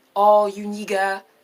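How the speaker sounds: French-accented delivery. Mimicking how a French speaker would say it, French accent. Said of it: "the N-word with the French accent".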